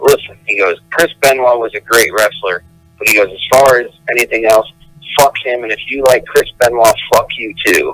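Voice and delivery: plain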